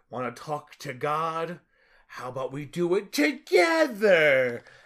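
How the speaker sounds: swooping, unmenacing, harmless-sounding delivery. Retelling a movie scene, imitating Harrison Ford's character's unmenacing threat. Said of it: "You said that in the least menacing way possible".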